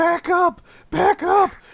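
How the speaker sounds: high, shrill, blaring, ragged, drawn-out scream. Retelling how Andy Werski screamed at people: Andy Werski screaming. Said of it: "when he's screaming".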